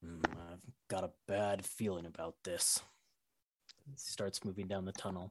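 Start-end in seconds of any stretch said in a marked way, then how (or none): 0.0-2.8 muttering, much lower and quieter. Narrator voicing Torin as he follows Hakan down the tunnel: Torin muttering under his breath. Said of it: "you can hear him muttering".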